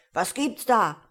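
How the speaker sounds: sudden loud shout. A narrator reads a starling suddenly shouting at a wolf, in a deep shouting voice. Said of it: "mit tiefer Stimme zu schreien".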